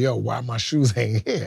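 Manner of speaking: put-on, mock-sarcastic joking tone. Retelling how Big asked for his shoes before going on stage, imitating someone joking sarcastically. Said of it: "making jokes, but in a sarcastic way".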